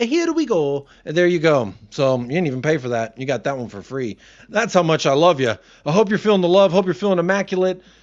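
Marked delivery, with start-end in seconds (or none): 0.0-0.9 raised-pitch video game hero voice. Saying the transfer catchphrase as a joke: Mario voice. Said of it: "in the fucking Mario voice".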